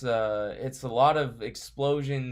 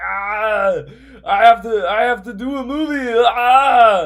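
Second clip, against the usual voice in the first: very high, loud, clumsy put-on Austrian accent; 11 semitones higher, 14 dB louder than usual. Describing something cheesy that wants to be serious, in an Arnold Schwarzenegger impression. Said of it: "I'm not good at Arnold Schwarzenegger impressions".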